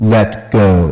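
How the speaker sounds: very low, deep, resonant and resounding voice. Telling a joke, the narrator voices the answer from heaven in a deep resounding voice. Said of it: "a deep voice resounded".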